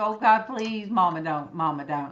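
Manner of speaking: ordinary talk, nothing marked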